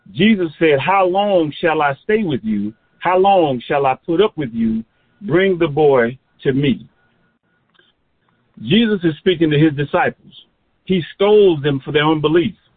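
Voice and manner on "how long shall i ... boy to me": ordinary talk, nothing marked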